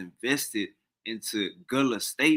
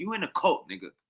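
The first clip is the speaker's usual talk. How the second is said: easy, smooth, rolled-off-the-tongue, pitched up; 5 semitones higher than usual. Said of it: "Watch how Angry Blood just off the tongue".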